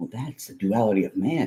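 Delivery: patronizing, condescending, talking-down know-it-all tone. Retelling a reply to a father about a movie: imitating a condescending tone. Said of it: "with that tone of voice".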